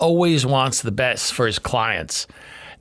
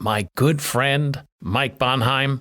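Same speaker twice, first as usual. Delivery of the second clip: slow, exaggerated mock sincerity. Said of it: "did you hear the sincerity in my voice".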